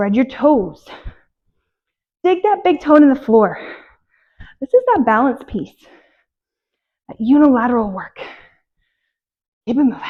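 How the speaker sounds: out of breath, winded. Talking through a lunge-and-press exercise set, out of breath. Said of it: "You can tell I'm getting out of breath".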